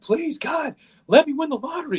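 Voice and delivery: anguished, desperate pleading scream, very high pitch. Telling a story about a man on a cliff, retelling a scream at the sky. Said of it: "screams at the sky".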